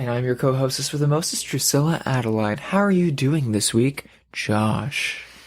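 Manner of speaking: mock public radio announcer voice. The co-host introduces herself on a horror movie show, in a mock NPR voice. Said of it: "This is like delicious dish NPR voice".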